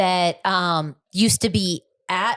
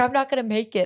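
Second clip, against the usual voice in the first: put-on high, tearful sob, blubbering through words; 5 semitones higher than usual. Retelling what a crying son kept saying on the way: imitating crying. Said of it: "the whole time he was crying".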